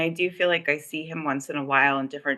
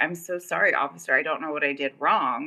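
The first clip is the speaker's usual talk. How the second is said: put-on sobbing, tearful voice. Retelling being pulled over by a cop: retelling own sobbing. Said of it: "I was sobbing, crying".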